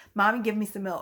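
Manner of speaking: imitated rude child voice. Retelling how the youngest child asks for milk: imitating a rude child demanding. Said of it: "he can be a bit rude, and he'll be like".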